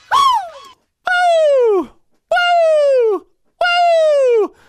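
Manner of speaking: very high, light, well-supported head-voice woo. Showing the note being discussed: light head voice woo. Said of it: "It's a well-supported head voice note".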